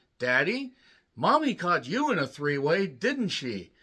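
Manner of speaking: put-on childlike voice. Acting out a little boy asking his dad a question: imitating little Billy. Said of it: "little Billy hears that line and looks at his dad and says".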